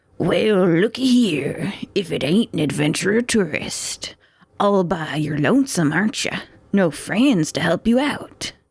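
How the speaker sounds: rough, gruff voice of a hulking brute. A narrator voices a giant calling out to a lone adventurer, in a gruff voice. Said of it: "With a gruff voice".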